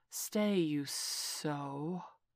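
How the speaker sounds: hissed, snakelike hissing voice. Answering a companion who wants to leave, hissing. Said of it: "Kaa hissed".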